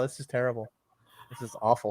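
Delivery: ordinary talk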